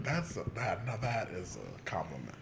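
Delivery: normal talking voice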